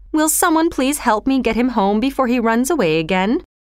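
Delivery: ordinary delivery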